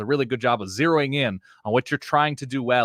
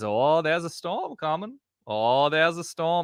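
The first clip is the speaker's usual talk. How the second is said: put-on terrible pitched-up Maine old sea-captain accent; 5 semitones higher than usual. Doing a bit about an old sea captain watching the skies, terrible accent. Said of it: "it's a terrible accent".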